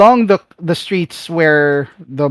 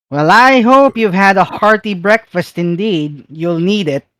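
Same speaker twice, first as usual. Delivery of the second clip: put-on woman's voice; 4 semitones higher than usual. Voicing a woman calling out from behind the party: loud female NPC voice. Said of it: "you hear a loud voice from behind you, a female".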